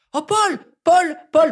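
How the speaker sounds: very high-pitched voice. Retelling what he said to his friend about a passing celebrity, high-pitched voice. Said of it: "pourquoi je prends la voix aussi aiguë".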